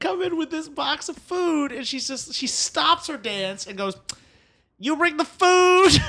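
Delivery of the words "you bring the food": put-on shout, much higher and louder than normal. Retelling how a woman shouted across the room at the speaker, imitating her shout. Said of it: "Just shouts across the room at me".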